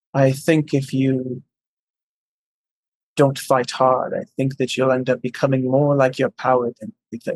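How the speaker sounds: whispered very slowly and softly. Acting out a character's line as he leans in close, slow soft whisper. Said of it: "he whispers that really, really slowly, really softly".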